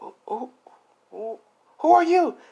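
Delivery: very high, startled, squeaky voice.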